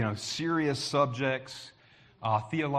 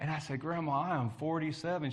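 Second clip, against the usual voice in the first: usual speaking voice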